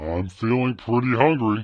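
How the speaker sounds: ogre-like character voice. Previewing a voice-changer pitch setting for viewers, in an ogre voice. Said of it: "I like the ogre voice better".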